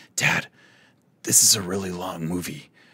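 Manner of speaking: whispered delivery. A dad retells his daughter leaning over during a movie, retelling a whisper. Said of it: "she whispers".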